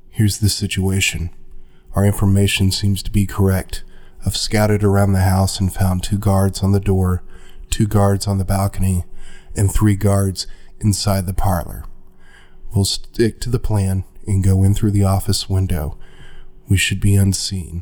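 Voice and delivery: low-voiced character voice. Voicing a character who briefs the group on a plan: Nifron in a low voice. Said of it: "Nifron gathers you together in a low voice".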